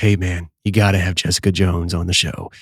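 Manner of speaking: very low, deep, dead-serious voice. Host retells his buddy urging him to book the guest; Joel's real low voice. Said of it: "in the Joel way, the real low voice".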